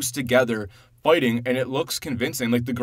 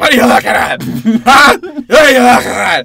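play-acted drunken yell, very high and very loud; 10 semitones higher, 15 dB louder than usual. Retelling a movie scene where Superman stumbles out: imitating drunk Superman. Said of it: "Superman just stumbles out drunk".

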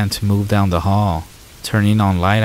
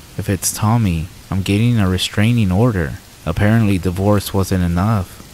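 ordinary delivery

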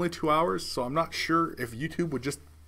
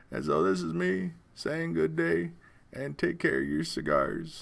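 botched put-on voice, rough and creaky. Signing off the episode with a sign-off line: crap Bill Clinton impression. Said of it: "such a crap, uh, Bill Clinton impression".

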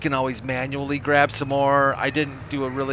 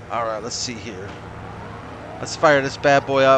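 ordinary talk

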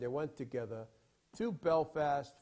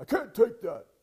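put-on loud, high, heavy British accent laid on thick; 9 semitones higher, 8 dB louder than usual. Retelling a man refusing the money you handed him, thick British accent. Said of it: "with his thick accent".

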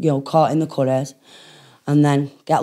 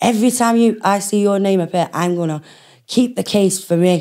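mock shouting, higher pitch; 5 semitones higher than usual. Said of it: "shouting at me".

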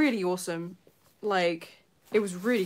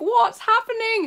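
high, loud, shouted voice; 8 dB louder than usual. Retelling hearing a scream from downstairs: imitating own past shout. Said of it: "I was shouting, like".

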